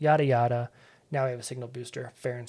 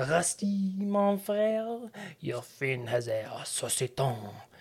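very slow, laid-on, very put-on Parisian French accent; 4 semitones higher, 4 dB quieter than usual. Recapping a scene, quoting a new friend's reply to Rusty Pete: very put-on Parisian accent. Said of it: "in a very put-on Parisian accent".

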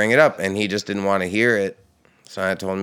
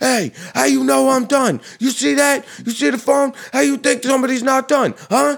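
very high-pitched, shrill hollering; 4 dB louder than usual. Retelling a guy yelling at the speaker from across the room; retelling his yell. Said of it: "this guy starts yelling at me".

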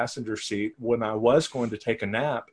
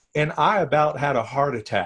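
ordinary talk, nothing marked

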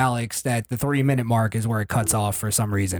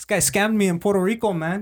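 very high-pitched fake Spanish accent; 9 semitones higher than usual. Acting out someone scammed in puerto rico: put-on spanish accent. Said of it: "I just did an accent".

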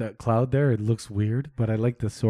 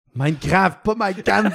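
shouted, much higher pitch; 9 semitones higher, 4 dB louder than usual. Joking about Minecraft in a group conversation, shouting it out. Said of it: "Why do you have to shout it out?".

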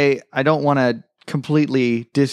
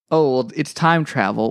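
normal talking voice

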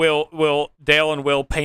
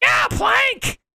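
put-on high-pitched shout in a little kid voice. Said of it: "That's what I was imagining in his voice".

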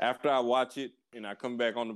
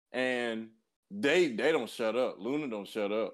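plain

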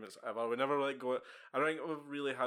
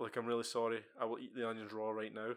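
usual speaking voice

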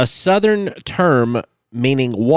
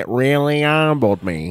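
mock speech out of the side of mouth. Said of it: "you get that side mouth talk going on".

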